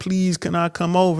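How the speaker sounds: put-on crying, tearful begging voice. Retelling how women plead with a man: imitating crying begging. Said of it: "women will be crying, begging him, like".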